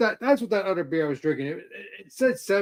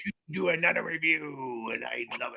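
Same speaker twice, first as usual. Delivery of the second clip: cartoon crab character voice, quieter; 3 semitones lower, 6 dB quieter than usual. Kicking off another beer review with friends, in a Mr. Krabs voice. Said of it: "like Mister Krabs?".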